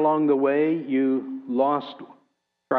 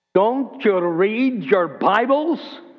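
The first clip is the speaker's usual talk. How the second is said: high-pitched shout in Scottish brogue; 6 semitones higher, 4 dB louder than usual. A professor breaks the silence after his question goes unanswered, shouting in a scottish brogue. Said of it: "shouting in his Scottish brogue".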